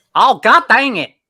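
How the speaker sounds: loud, high, put-on Alabama-style country accent. Asked to try a country accent, speaking in a country accent. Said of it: "do a country accent".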